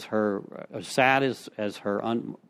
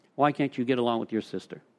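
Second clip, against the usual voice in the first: whispered. Retelling what the mother said on her deathbed: imitating a whisper. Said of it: "She whispers to me".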